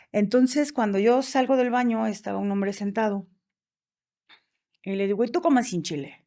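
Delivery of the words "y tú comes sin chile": cross, irritated, angry voice. Retelling what she said to a seated man after leaving the bathroom, mock-angry retelling. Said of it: "así con mi voz enojada como siempre".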